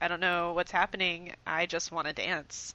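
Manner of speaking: ordinary talk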